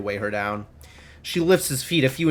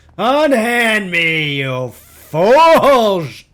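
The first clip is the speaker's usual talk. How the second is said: put-on drunken bellowing roar, very loud and high; 8 semitones higher, 10 dB louder than usual. The troll, dragged down the hallway by two guards, shouts back: drunken roar. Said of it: "The troll's voice comes out in an inebriated roar".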